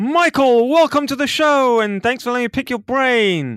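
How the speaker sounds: hyped-up, loud, excited voice, very high pitch. Retelling own podcast intro to a guest: imitating own excited intro. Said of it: "I got all excited".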